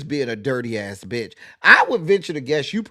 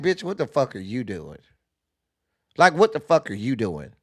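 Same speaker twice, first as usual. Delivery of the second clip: bewildered, stunned, disbelieving, incredulous tone. Reacting to a video, voicing what the little boy's look says: imitating the little boy's reaction.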